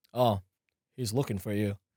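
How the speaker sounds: quiet, deep odd voice. Recalling opening for a headliner, the speaker imitates the manager's voice. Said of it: "What is that voice?".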